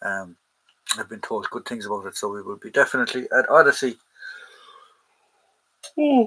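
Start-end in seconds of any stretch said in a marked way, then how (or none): 2.2-6.3 yawning, louder and slower. A livestreamer talking to viewers while waiting for people, yawning. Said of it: "excuse me for yawning".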